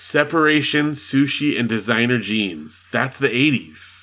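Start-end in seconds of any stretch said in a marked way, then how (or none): none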